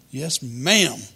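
ordinary talk, nothing marked

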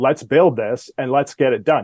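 usual speaking voice

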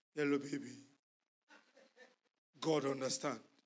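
deep, dropped-down voice.

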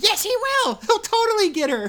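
very high, loud, shrill, swooping shout. Retelling a scene where a character pulls up shouting; Toad's high-pitched shout. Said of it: "shout something like in his high-pitched voice".

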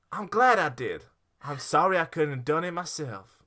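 put-on Southern American accent. Trying out accents on a quoted line, in a Southern American accent. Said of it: "I'm going south".

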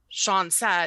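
ordinary talk, nothing marked

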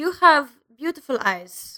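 put-on obnoxious German reporter accent. Retelling a prank interview, quoting the fake reporter: Dominic Monaghan's fake German reporter.

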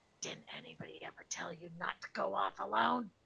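disguised, altered voice with rasp and swooping pitch. Grabbing him from behind and covering his eyes, speaking in a disguised voice. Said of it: "disguise my voice and say in his ear".

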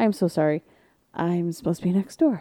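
soft, hushed whisper under the breath. Retelling apologizing at the wrong house door: retelling a whisper. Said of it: "And so I start whispering".

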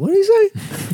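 very high, startled, squeaky what. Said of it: "at first I was like".

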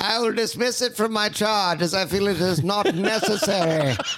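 mid-Atlantic accent throughout. Mockingly dismissing an argument, transatlantic accent. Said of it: "Are you speaking in a transatlantic".

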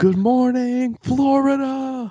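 bellowed, very high, full-lung yell. Retelling how the speaker's dad yelled outside one morning, retelling a yell at top of lungs. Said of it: "yelled at the top of his lungs".

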